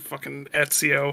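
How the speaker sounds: muttering under the breath. Recalling seeing a stranger who looked like Ezio Auditore, retelling a mutter under breath. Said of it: "I just muttered under my breath".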